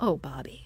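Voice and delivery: very gentle, mild, almost tender voice. Retelling how a performer gently scolded himself while watching: gentle Bobby imitation. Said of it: "the way he calls himself by name is so gentle".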